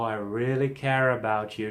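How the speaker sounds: acted, very soothing, reassuring, caring voice. Showing how effective [name] is with his voice, [name]'s soothing voice. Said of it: "his very soothing voice".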